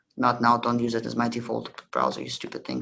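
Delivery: ordinary delivery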